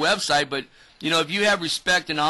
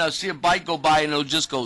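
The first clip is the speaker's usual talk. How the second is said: ordinary talk, nothing marked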